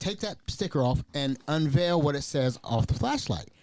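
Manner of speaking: ordinary talk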